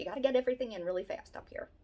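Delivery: fast, rushed, rattled-off Philadelphia talk. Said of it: "We talk fast".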